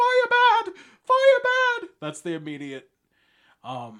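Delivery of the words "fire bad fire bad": very shrill, very loud, very slow drawn-out scream. Imitating a cartoon monster who sees fire: screaming as Frankenstein's bride. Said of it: "she just starts screaming".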